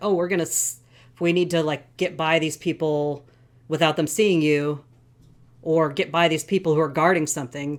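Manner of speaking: ordinary talk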